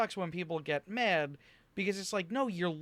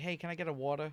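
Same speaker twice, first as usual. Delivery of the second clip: put-on speaker's own natural New York accent; 4 semitones lower, 4 dB quieter than usual. Retelling asking for a water in Florida, in own New York accent. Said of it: "you must be from New York".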